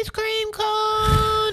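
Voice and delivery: very high squeaky voice, "cone" stretched out. Describing a man's staged video, repeating what he says in a high-pitched voice. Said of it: "in a high pitched voice".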